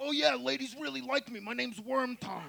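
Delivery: rough, meathead gym bro voice. Joking how a guy like that would introduce himself, 80s Gold's Gym lifter voice. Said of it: "A guy like that would give himself the name".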